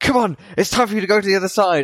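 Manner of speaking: mock very high, furious angry yell. Retelling how he shouted at the kid: imitating someone shouting. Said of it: "frowning and shouting at the kid".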